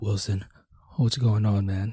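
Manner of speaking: frightened voice, dropped very low and deep. Retelling a drunk friend's call from a holding cell: imitating someone talking low, scared. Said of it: "he was talking low 'cause he was scared".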